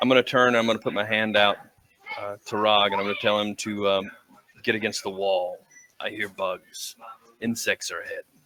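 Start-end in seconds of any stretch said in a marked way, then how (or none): 6.0-8.2 very quiet, hushed whisper. Warning another character in a cave that insects are ahead: whispering. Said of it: "I whispered it".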